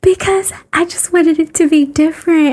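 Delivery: very high-pitched motherly voice. Retelling mom's answer about choosing the name: imitating mom's higher-pitched voice. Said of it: "my mom has an even higher pitched voice than me".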